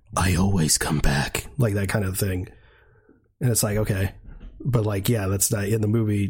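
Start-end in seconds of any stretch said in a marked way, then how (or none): 0.2-1.5 mock creepy, menacing, slow, sinister, drawn-out delivery. Quoting how he said a line in a voice recording, mock-sinister tone. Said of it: "it was all like sinister".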